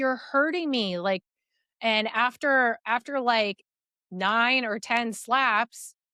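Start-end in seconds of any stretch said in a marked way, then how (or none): 0.0-1.0 high-pitched, mild, put-on yelp like screaming. Retelling own words while being hit: imitating own screaming. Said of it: "and I'm screaming".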